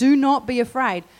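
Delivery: big booming voice, slow. Retelling how an angel appeared to men in the dark, in a big booming voice. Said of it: "a big booming voice saying".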